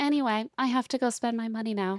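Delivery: acted, breezy, unbothered, offhand delivery. Contrasting an angry retelling with her actual line: casual, offhand delivery. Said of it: "but she's just like".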